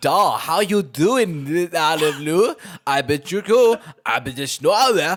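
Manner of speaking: clumsy fake Russian accent, booming and very loud. Imitating a man greeting lou, in a bad russian accent. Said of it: "he's doing this fucking Russian accent".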